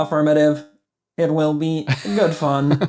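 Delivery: fully committed, put-on robotic voice. Podcast host replying to the other host's plan for the last episode, robot voice. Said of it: "once you commit to the robot voice".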